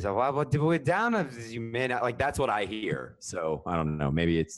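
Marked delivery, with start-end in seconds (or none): 0.1-2.0 put-on drunk voice, higher in pitch. Imitating a radio call again after being told it missed: drunk-sounding Pete Rose impression. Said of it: "I hear alcohol".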